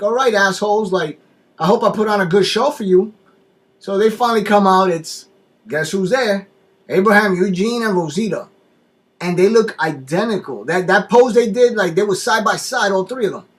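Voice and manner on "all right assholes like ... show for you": put-on yelling, higher pitch. Retelling a character yelling at an army truck: imitating someone yelling. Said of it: "yelling at the truck".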